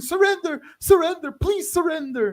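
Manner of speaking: put-on scream, very high pitch. Retelling soldiers in the trenches calling to the enemy: imitating soldiers screaming. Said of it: "They're screaming".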